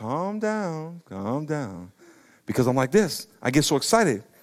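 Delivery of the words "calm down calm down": soothing, calming voice. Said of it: "my wife's like".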